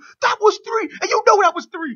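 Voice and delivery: shrill, very high, accusing screaming rant. Describing a man who screamed at Shane, imitate him screaming at the audience. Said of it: "he's screaming at the audience too".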